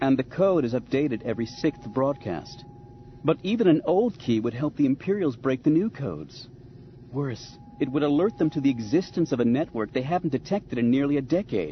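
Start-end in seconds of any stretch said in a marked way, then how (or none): none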